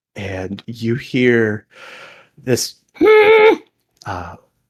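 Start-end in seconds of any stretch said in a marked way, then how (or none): 2.3-4.3 loud high-pitched giggling. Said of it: "giggles kinda come from different spots in the water".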